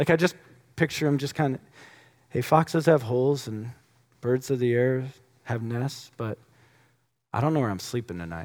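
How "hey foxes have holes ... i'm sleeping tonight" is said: relaxed, calm, matter-of-fact easygoing tone. Acting out a line from the passage, imitating Jesus speaking calmly. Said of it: "how calmly he would have said it".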